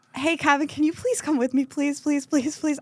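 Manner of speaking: play-acted anxious, nervous, repeated pleading. Retelling begging Kevin to come along: retelling a nervous plea. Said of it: "So I was so nervous".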